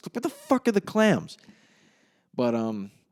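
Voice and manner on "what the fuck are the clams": mock confused, disgusted outburst, higher. Retelling a movie scene where a frantic kitchen expediter looks around: imitating confused, disgusted freak-out. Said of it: "just pure confusion and disgust".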